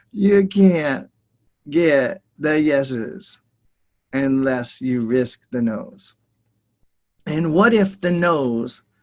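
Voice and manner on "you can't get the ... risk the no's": repeated slower, with lower pitch. A speaker repeats a point to an audience, saying it again slower. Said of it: "I'll say it again slower".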